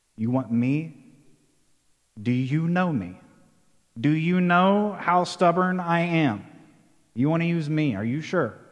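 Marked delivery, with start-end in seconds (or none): none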